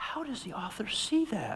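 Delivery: whimsical put-on storybook fairy voice, soft and high. Speaking to an audience, a speaker demonstrates a reader's question in a fairy voice. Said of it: "in that fairy voice like I just did".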